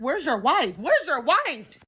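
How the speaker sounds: furious, loud, high, swooping angry shouting. Retelling confronting a married man, the speaker acts out her angry yelling. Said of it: "Now I'm yelling like".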